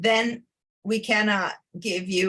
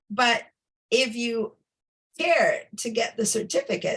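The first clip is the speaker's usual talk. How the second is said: halting voice cracking mid-phrase; 3 semitones higher than usual. Speaker explaining a training program to listeners, voice cracking. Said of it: "my voice is cracking".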